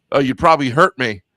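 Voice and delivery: ordinary talk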